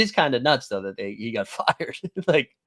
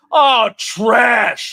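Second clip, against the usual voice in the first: high, loud screamed jeering; 8 semitones higher, 10 dB louder than usual. Retelling a fan next to them at a game: imitating a fan screaming. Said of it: "Just screaming trash".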